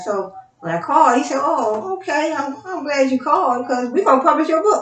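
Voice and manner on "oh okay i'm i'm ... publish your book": mock upbeat, pleased, cheerful, happy tone. Retelling what the publisher said on the phone: imitating a happy tone. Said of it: "he said it in, in a happy tone".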